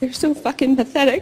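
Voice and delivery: depressed, self-berating tone, high pitch. A coach shows an audience what depressed people tell themselves, depressed tone. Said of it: "Say it in the tone of voice you say it when you stay depressed".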